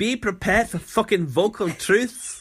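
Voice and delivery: put-on loud, high Scottish accent. Repeating a quoted line on request, in a Scottish accent. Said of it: "I want to hear that in the Scottish accent".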